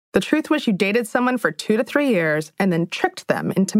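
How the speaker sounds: plain reading voice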